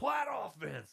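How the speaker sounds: put-on big booming voice. Retelling a coach calling players onto the field: imitating a big booming voice. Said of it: "your big booming voice".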